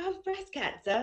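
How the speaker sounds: very high-pitched put-on English accent. Recalling how she used to say it to people, in a put-on English accent. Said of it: "I would talk in an English accent".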